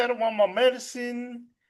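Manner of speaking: put-on talking like a little baby. Retelling a woman's lines from a movie scene, talking like a baby. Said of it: "She's like talking like a baby".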